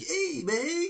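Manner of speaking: put-on street voice, pitched very high.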